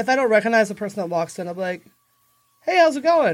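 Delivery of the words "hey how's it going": friendly, bright, higher-pitched service-industry voice. A bartender shows how they greet someone they don't recognize, in a service industry voice. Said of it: "that's your service industry voice".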